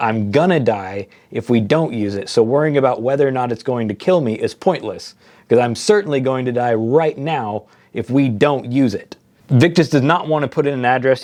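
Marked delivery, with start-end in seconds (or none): none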